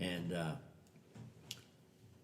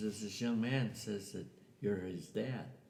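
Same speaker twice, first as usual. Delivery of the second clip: usual speaking voice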